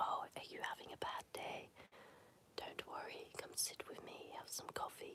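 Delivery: soft, comforting ASMR-style delivery. Imitating what ASMR channels say to viewers: imitating ASMR-style soft voice. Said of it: "This is why I'm not a S M R channel".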